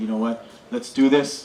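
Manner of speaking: plain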